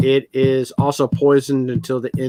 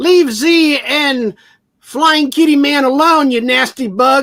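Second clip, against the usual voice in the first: very high, loud, shrieking scream; 13 semitones higher, 5 dB louder than usual. Voicing Flit as she attacks the big bug: Flit screaming. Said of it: "Flit screams out".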